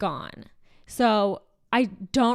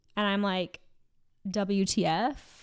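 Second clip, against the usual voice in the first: ordinary talk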